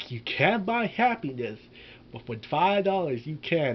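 ordinary talk, nothing marked

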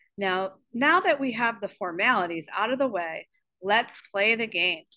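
plain

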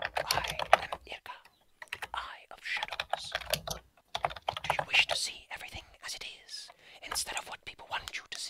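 hushed, very quiet, subtle whisper. Voicing an eye spirit speaking as a hand touches it: quiet whispering voice. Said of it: "you hear a very quiet, whispering voice".

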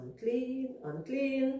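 sorrowful voice. Telling the story of the ten lepers, show how they called out: real sad voice. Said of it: "unclean in your real sad voice".

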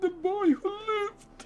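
put-on villain voice. Reading the printed words on a building set aloud in Voldemort voice. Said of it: "in Voldemort's voice".

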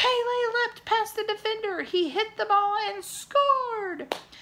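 very high, shrill shouting. Among cheering fans, the teenager with the binoculars calls out the play, shouted. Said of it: "The teenager with the binoculars shouted".

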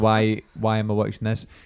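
normal talking voice

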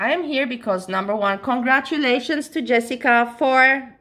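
called out, buzzing with excitement. A speaker explains why they're here, yelling. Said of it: "I'm yelling again".

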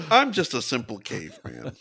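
swooping, animated, hammy character voice, wide pitch swings. Joking about another speaker's look: Unfrozen Caveman Lawyer voice. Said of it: "You do look a little unfrozen caveman lawyer".

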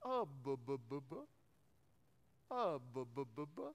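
low, bubbling underwater noise. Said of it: "like a squirrel in the A C unit".

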